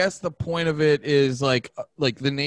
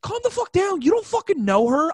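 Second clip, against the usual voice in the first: very high, spazzing, freak-out rant. Retelling what he snapped at someone on set, retelling a freak-out. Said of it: "I just spazzed on the onset".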